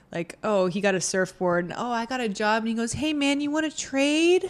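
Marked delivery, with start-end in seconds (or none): 2.9-4.4 put-on sugary, very sweet, pitched-up voice. Recounting a man offering another man a trade, imitating a very sweet ask. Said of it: "He said it very sweetly".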